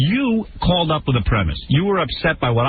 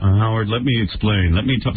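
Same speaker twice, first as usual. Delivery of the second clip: very low, flat, level monotone drone; 7 semitones lower than usual. Imitating a guy the hosts are mocking, doing him in a monotone. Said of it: "Listen to this guy in a monotone".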